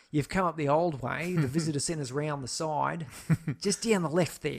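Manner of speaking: put-on noticeable Australian accent. Acting out a voice that comes in to address a visitor, fairly australian accent. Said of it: "it's a fairly Australian accent".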